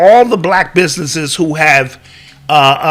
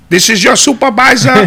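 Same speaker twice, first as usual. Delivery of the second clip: put-on Indian accent, pitched up; 6 semitones higher, 3 dB louder than usual. Acting out a call to a hired third-party customer service company from India: imitating an Indian accent. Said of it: "I started Indian and then it's the whole Middle Eastern".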